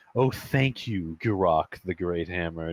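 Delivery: sarcastic, faux-reverent, mock grateful tone. In a role-play, a character thanks the big robot with sarcastic thanks. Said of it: "doing like one of the sarcastic bows".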